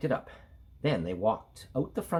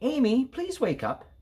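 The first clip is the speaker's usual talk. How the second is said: said very nicely, sweetly; 11 semitones higher, 3 dB louder than usual. Narrating a story, a mother stands amy on her feet to wake her, said very nicely. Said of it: "said very nicely".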